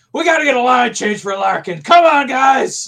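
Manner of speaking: shrill, very loud, high yell. Retelling Mickey Redmond yelling at the team from the box: imitating Mickey Redmond yelling. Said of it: "He's kind of yelling at the team".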